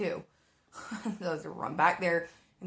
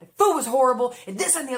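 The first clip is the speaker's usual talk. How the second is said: very loud, high, upset yelling; 6 semitones higher, 10 dB louder than usual. Retelling a customer's complaint about the food: imitating someone yelling. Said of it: "yelling at me".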